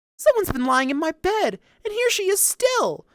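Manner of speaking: tiny, very high-pitched voice. Reading the Goldilocks story, the wee little bear speaks in his wee little voice. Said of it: "said the wee little bear in his wee little voice".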